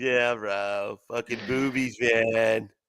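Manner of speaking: put-on surfer bro voice. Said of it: "talking like surfer bros".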